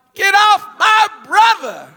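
high, shouted yell carrying from a distance, acted out. Retelling hearing his little brother from a distance: imitating a yell. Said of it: "somebody yell".

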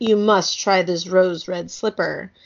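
ordinary delivery

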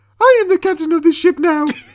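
very high, very loud, belted full diva voice. Asked to do a captain line as the character, in a Miss Piggy voice. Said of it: "That's my Miss Piggy".

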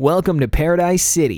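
put-on radio dj voice. Recalling how the radio host in a game talks, imitating the game's radio host. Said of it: "he's like".

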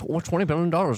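stumbling on the first word, pitch lifted. Imitating how Elon would answer an offer: Elon Musk impression. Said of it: "oddly accurate Elon Musk impression".

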